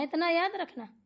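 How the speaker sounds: plain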